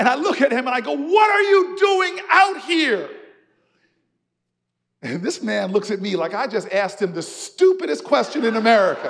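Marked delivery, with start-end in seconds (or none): 0.9-3.1 slow, loud, high-pitched yelling. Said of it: "And so I yell at this man".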